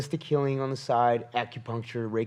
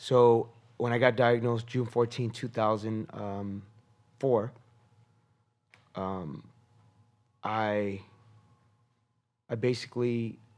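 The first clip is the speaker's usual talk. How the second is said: voice catching and breaking, choked up with emotion. Answering questions about a cancer diagnosis, choked up. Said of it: "I'm getting choked up".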